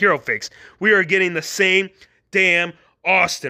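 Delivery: normal talking voice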